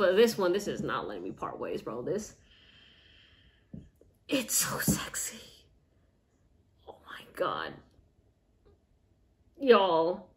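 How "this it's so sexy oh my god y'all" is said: very slow, breathy, choked-up whisper near tears. Speaker talking about a fragrance they love, on the verge of tears. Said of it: "I might cry".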